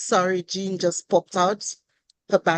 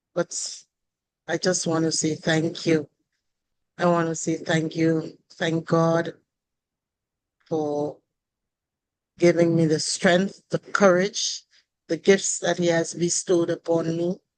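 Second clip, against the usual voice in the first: hoarse, lost voice, spoken faster. At a celebration, the speaker thanks everyone while having lost his voice. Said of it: "I've lost my voice".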